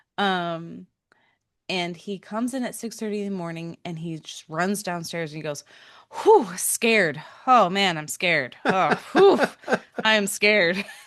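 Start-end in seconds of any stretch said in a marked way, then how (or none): 6.3-10.8 imitated breathless, scared voice, louder. Retelling how her son ran downstairs at dawn: imitating a breathless, scared son.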